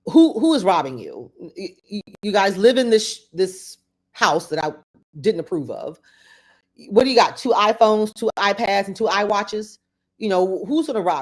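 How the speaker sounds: normal talking voice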